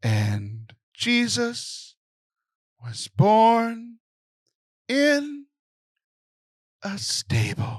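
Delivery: very slow, halting, sleep-inducing, droning sermon voice. Retelling how the deacon spoke during his homily: imitating a sleepy, droning homily. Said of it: "He would talk like this".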